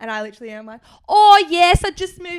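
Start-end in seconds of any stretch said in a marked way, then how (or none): 1.1-2.4 put-on British accent, raised pitch, slow, drawn out. Retelling fooling strangers in a line with an accent; put-on british accent. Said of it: "I start talking with an accent".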